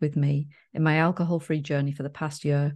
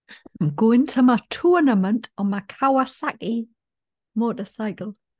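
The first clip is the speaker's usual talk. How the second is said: fresh attempt at a loud, high-pitched Geordie accent; 7 semitones higher, 5 dB louder than usual. Trying out new accents with another speaker: a new Geordie accent. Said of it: "We're just trying out our new accents".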